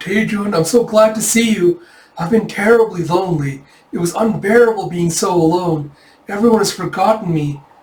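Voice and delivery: high, tearful, weepy sobbing voice. Reading a comic aloud, voicing a dreamed character: imitating Yona crying. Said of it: "as he imagines Yona all crying".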